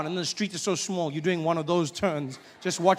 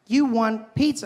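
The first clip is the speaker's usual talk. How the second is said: pitched-up digital phone assistant voice; 5 semitones higher, 4 dB louder than usual. Acting out the phone's assistant answering: Siri voice. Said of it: "She's like".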